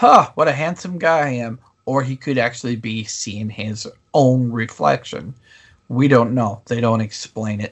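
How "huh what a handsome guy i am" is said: acted-out sarcastic tone. Discussing a show scene, voicing what the character might say, mock-sarcastic remark. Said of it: "He could just be sarcastically saying".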